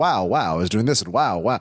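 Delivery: put-on clean old-school club comic one-liner rhythm. Retelling an older comic's weird one-liners: Greg Buckman impression. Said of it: "it was Greg Buckman who was".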